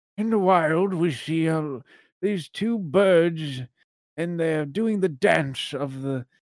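put-on gentle old man voice. Narrating birds in the wild, trying a subtle old man voice. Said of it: "he's like a very subtle, like, old man voice".

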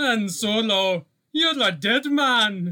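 booming put-on Scottish accent, very loud and high. Doing a quoted line in honor of their Scottish roots, in a Scottish accent. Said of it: "in honor of my Scottish roots".

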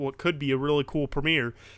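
ordinary talk, nothing marked

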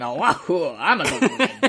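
very slow, goofy cartoon-villain whoops with big swoops. Making noises while trying to navigate the Patreon site, Wario noises. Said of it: "making fucking Wario noises".

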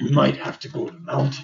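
put-on rough, creaky character voice. Telling the story, saying what Bjorn says in a Bjorn character voice. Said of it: "I'll do character voice".

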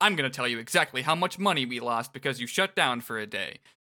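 ordinary talk, nothing marked

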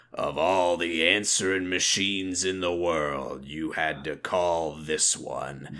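very low, gruff man's voice. Recalling a family's answering machine message, imitating its gruff man's voice. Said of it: "this like gruff man's voice that would go".

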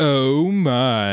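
botched imitation of a deep voice. Showing how an overthought impression attempt comes out: failed George Takei impression. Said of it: "then it comes out as".

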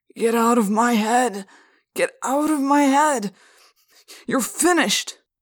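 put-on loud, slurring, words running together, repeated. Mr. Pardew, as if answering himself, cries out in a slurred voice. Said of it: "he said in a slurred voice".

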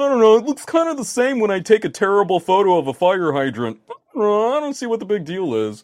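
high, loud, dismissive mock techie voice.

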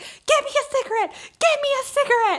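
mock very high, panicked, freaked-out pleading tone. Retelling how a woman stung for the first time called to her partner, freaked out. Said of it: "she was like freaking out".

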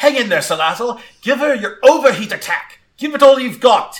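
shrill, very high, exasperated and frustrated yell. Narrating a story, voicing Gwen as she calls out to Salazzle: Gwen's frustrated shout. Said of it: "she shouts out".

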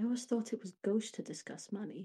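soft, hushed whisper. A game narrator voices one of the younger characters, who whispers. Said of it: "one of the younger ones who just whispers".

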